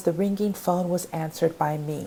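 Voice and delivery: ordinary talk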